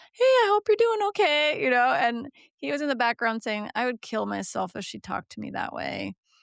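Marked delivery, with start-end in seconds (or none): 0.2-1.6 very high-pitched, loud phone voice. Showing the phone voice the chief resident found annoying: high phone voice. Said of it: "My phone voice is kinda like this".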